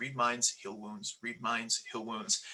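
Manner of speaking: muttering under breath. Voicing a character repeating words to himself: muttering under his breath. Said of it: "under his breath".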